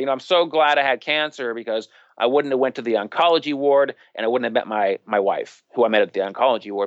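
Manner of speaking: normal talking voice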